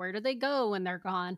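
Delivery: ordinary delivery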